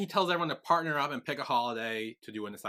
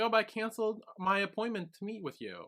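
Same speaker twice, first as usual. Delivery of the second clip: mock sobbing, high, tearful, wounded voice; 9 semitones higher than usual. Retelling a character's reply about a canceled appointment: imitating someone crying. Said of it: "and she cries".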